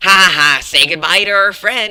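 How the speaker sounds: very loud, high, drawn-out, laughing voice. Reading a character's game line aloud in a Funtime Freddy voice. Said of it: "my best Funtime Freddy voice impersonation".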